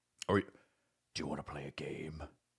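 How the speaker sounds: low, hushed, quiet villain voice. After an apology, trying a Jigsaw impression. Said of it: "did not sound like Jigsaw at all".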